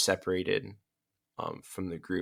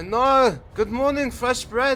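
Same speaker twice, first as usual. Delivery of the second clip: bright, shrill, very high, loud, cheerful call; 10 dB louder than usual. A shopkeeper greets customers in the morning, laughing and giggling with her daughters, in a cheerful greeting. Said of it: "kind of laughing and giggling".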